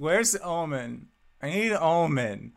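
put-on sloppy drunken slur, "Omen" drawn out. Game master voices a man asking the players for someone, in a drunken voice. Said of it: "as he drunkenly asks".

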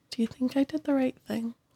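in a whisper. Playing Pochi, tugging a companion's sleeve as they walk away, whispering. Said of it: "she kind of like whispers she's like".

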